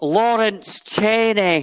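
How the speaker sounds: put-on Scottish accent, high and loud. Retaking a name after the other host gave up, in a Scottish accent. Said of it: "Let me retake that for you".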